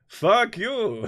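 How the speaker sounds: put-on very high vampire voice, vague Transylvanian accent. Imagining him answering people who try to cancel him, in a Transylvanian Dracula voice. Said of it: "That is my Transylvanian, vaguely sounding Dracula voice".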